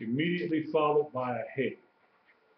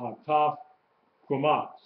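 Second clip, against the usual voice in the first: hataf and kwamat said as separate words with pause.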